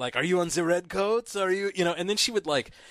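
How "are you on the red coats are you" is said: heavy, laid-on, thick put-on German accent. Retelling what a woman with a bayonet and candy bags would ask, in a thick german accent. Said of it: "with this thick German accent".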